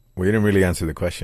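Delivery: ordinary delivery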